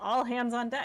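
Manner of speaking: loud, bellowed-out rallying yell. Playing a character who wakes the crew: yelling. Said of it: "I yell".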